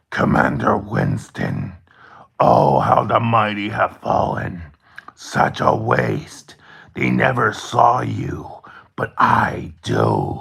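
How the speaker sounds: rough, creaky demonic voice. Narrator voicing a voice ringing out to Commander Winston: demonic voice. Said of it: "a demonic voice ring, rings out".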